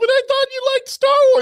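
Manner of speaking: very high, loud, weepy, tearful desperate crying. Retelling what a tearful date said after the show: imitating her in tears. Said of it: "She's all like".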